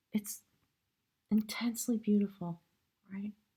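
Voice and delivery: a little choked up, catch in the throat. Card reader reflecting on a powerful reading, getting a little choked up. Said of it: "I'm getting a little choked up".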